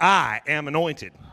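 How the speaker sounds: said with a little attitude. Leading listeners in repeating a line: with a little attitude. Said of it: "Now say it with a little attitude".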